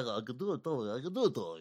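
put-on mobster voice. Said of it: "That doesn't really sound like Tony".

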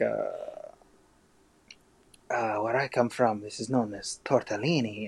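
put-on vague, generic pan-European accent. Pitching a scene idea, voicing a character in a vague pan-european accent. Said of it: "just like a vaguely pan-European accent".

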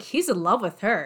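ordinary talk

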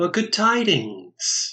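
light, lilting voice. Narrating a game scene, a clown speaks from behind the players: light, lilting voice. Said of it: "a light, lilting voice that goes".

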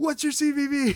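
mock very high half-shouted, half-yelled voice. Recounting calling out to someone while paying online, retelling a yell. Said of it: "I yelled at Kyle".

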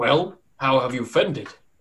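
put-on elderly man character voice. Storyteller voicing a tall old man greeting the returning group, tall old man voice. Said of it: "tall old man".

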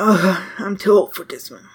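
quiet, muttered grumbling under breath. A storyteller acts out an old librarian climbing the stairs, quietly cursing under his breath. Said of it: "sort of quietly cursing under his breath".

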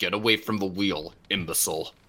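furious, angry pirate man voice. Ordering another player away from the ship's wheel: angry pirate man. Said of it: "Angry, angry pirate man".

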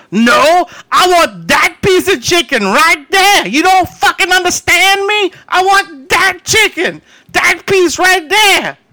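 very high, loud, furious top-of-lungs scream. Retelling a customer screaming about chicken at a counter: imitating a man screaming. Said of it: "he's screaming at the top of his lungs".

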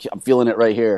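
ordinary delivery

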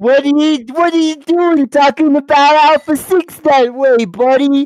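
put-on high, loud, spitty, muddled Northeastern mishmash accent. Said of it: "That's exactly how he talks".

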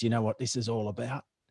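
spoken with a sharp, pointed hiss. Retelling what a dentist said on first meeting: imitating someone hissing. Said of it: "kinda hissed at me and goes".

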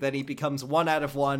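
ordinary talk

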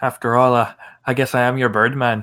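put-on Irish accent. Quoting a character's line to his companion, in an Irish accent. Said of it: "It was an Irish accent, right?".

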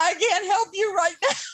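acted-out sobbing. Retelling what she said to a six-year-old on her lap, retelling own sobbing. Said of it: "I'm like sobbing going".

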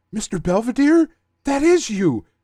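mock screaming outburst, very high and shrill. Retelling a cartoon scene as Terra is about to eat, imitating Aqualad screaming.

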